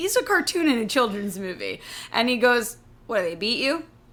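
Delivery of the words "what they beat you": offhand, casual, unbothered, matter-of-fact delivery. Retelling a cartoon character's line to a girl: imitating a casual, matter-of-fact line. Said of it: "he says it so casually, so matter of fact".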